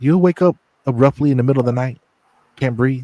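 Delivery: taunting, mocking tone. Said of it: "almost like a mocking tone".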